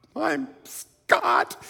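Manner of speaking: very high-pitched, tongue-tied stammering. Retelling introducing himself to a famous actress: imitating own stammered name. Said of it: "I just kind of stammered out my name".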